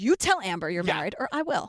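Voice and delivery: mock very low, sexy, sassy voice. Retelling how a friend confronted him: imitating someone sassy and sexy. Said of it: "you made me sound sassy and sexy".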